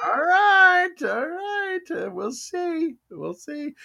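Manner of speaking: excitement pushing the voice very high. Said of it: "my voice goes up".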